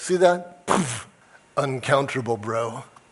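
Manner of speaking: slow, smug, self-satisfied know-it-all drawl. Imagining an online commenter's mic drop moment: imitating a smug commenter. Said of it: "It sounded smug".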